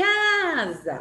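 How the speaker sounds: casa with ca said stronger. Showing that some syllables are said with more force, stress on first syllable of casa. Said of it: "Quem que eu falei com mais força? O K".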